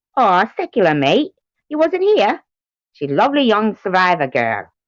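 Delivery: bad, sing-song Australian accent drifting into Cockney. Speaker tries an Australian accent for listeners; bad Australian accent, sounds Cockney. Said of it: "That didn't sound like Australian. It sounded like Cockney".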